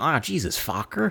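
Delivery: acted disdainful scoff. Retelling how characters in a movie say a name: imitating a disdainful tone. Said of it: "they constantly say it with, like, disdain".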